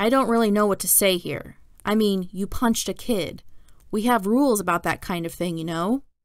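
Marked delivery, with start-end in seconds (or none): none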